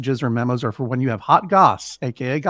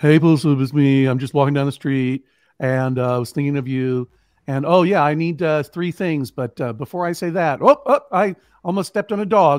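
distracted, rambling, meandering stream-of-consciousness delivery. Showing how he would leave a voice memo: acting out a rambling voice memo. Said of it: "like that kind of thing".

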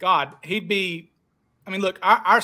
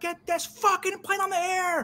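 mock, shrill, high-pitched screaming; 12 semitones higher, 4 dB quieter than usual. Telling a story about McNally on a plane, retelling McNally's scream. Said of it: "He screams out".

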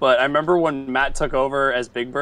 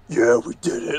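dropped, bottom-of-the-range deep, low put-on voice. Retelling how a friend voiced Oscar the Grouch: imitating Nikki's low voice. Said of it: "Nikki's voice was so low".

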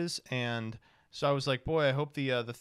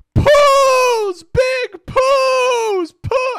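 put-on very high, very loud, shrill, drawn-out kid's scream; 16 dB louder than usual. Retelling a kid running off after reading a sign: imitating a kid screaming. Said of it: "he runs off screaming".

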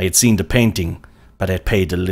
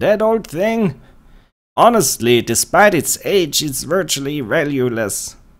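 vague, absent-minded, slightly higher-pitched voice; 8 semitones higher than usual. Asked about a client's small African figurine, Chahal character voice. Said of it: "I had spent some time studying Chahal's movements and habits. He was, by all accounts, absent-minded, / He was, / you're here for the antique fair?".

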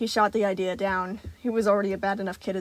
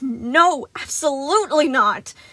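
raised voice, forced through gritted teeth; 5 semitones higher, 7 dB louder than usual. Reading a character's refusal while backing away, said through gritted teeth. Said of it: "Son said through gritted teeth".

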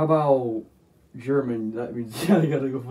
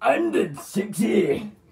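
put-on Scottish character voice, higher; 7 semitones higher than usual. Joining in with another line after the other speaker's impression: Fat Bastard voice. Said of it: "Fat Bastard".

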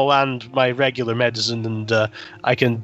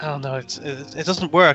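ordinary talk, nothing marked

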